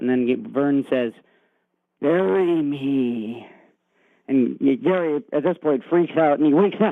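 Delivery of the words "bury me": put-on really scary voice. Retelling a dream, voicing Vern in the window; Vern's line in scary voice. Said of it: "In a really scary voice".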